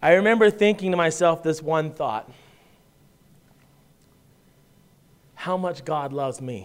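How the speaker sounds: tearful voice, about to cry. A father recalling looking down at his son, about to cry. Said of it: "and I'm going to cry".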